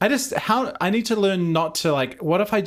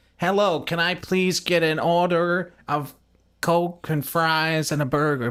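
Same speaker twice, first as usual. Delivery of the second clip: practised, put-on American accent. Trying to blend in with the group, speaking in a put-on American accent. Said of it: "I'm practicing my American accent".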